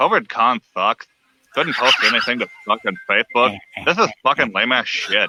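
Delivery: put-on crude cartoon teen voice. Recalling how they did it as Butt-Head, the speaker redoes the Butt-Head voice. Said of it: "how we did it as butthead".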